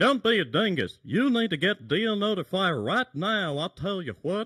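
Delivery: very high, swooping, sing-song cartoon voice. Speaker showing how he sells Deal Notifier: Hank Hill impression. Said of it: "I'll do my Hank Hill impression for you".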